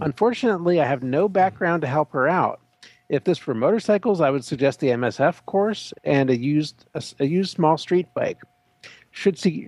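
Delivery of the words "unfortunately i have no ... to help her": usual speaking voice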